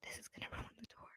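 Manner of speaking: muttered under the breath. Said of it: "it literally said under his breath".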